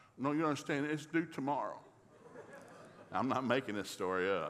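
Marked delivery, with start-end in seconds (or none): none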